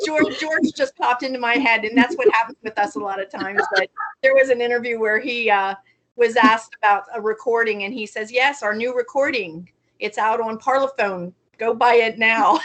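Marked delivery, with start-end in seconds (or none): 8.3-12.6 deadpan, completely flat, no fuss. Retelling an interview answer about a new recording: deadpan George impression. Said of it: "Just so deadpan with George".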